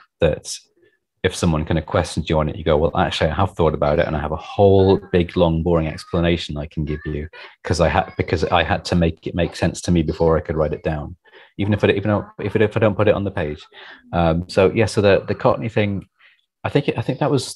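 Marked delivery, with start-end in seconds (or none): none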